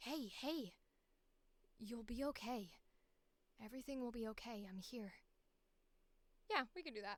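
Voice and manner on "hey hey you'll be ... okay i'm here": put-on young cartoon boy voice, slower. Speaker trying out a voice for a character, a little Ash Ketchum-like voice. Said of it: "A little Ash Ketchum-y".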